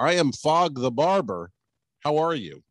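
put-on Caribbean accent, slow and unhurried. Retelling how a man introduced himself to them, imitating the guy's accent. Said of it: "this guy's accent".

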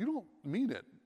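shocked, stunned reaction. [name] responds to Charles after what they found in the house; shocked. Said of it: "[name] was shocked".

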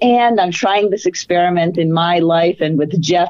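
ordinary talk

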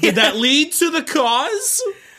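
high, slow, loud, baffled tone. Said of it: "And I'm like".

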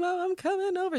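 hysterical sobbing, very high-pitched. Retelling calling mom at two in the morning: imitating hysterical crying. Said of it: "Call my mom hysterically crying".

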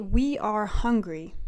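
ordinary delivery

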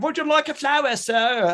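very high, really bad put-on Cockney accent. Retelling a story, voicing a woman in a really bad Cockney accent. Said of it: "some sort of like really bad Cockney accent".

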